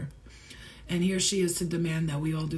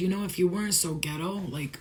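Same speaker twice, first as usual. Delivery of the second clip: plain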